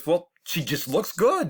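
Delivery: acted fed-up frustration. Retelling a man's reply about a cow in the ring, mock-frustrated voice. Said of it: "just kind of in a frustrated voice".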